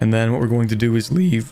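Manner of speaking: sudden voice crack. Streamer explaining the next move when a sudden voice crack hits. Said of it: "Instant uh, voice crack".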